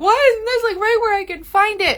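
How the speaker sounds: frantic, exasperated, high and loud outburst.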